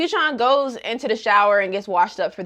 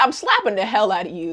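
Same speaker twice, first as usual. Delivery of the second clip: normal talking voice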